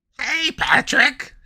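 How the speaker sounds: squeaky, very high, loud cartoon voice. Streamer on stream, calling out to Patrick in SpongeBob voice. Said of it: "You hear SpongeBob".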